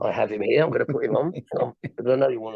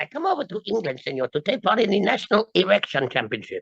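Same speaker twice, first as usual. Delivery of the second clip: pitched-up ventriloquist's dummy voice in put-on Mexican accent; 9 semitones higher than usual. A ventriloquist performs a routine with his puppet, in a mexican puppet voice. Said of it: "And he's a Mexican".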